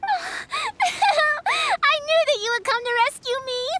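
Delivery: slow, high, tearful laugh-cry with relief. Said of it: "Don't cry".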